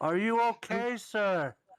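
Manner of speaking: shouting. In character, yelling a question into another character's ear: yelling in character. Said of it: "you don't have to yell in my ear".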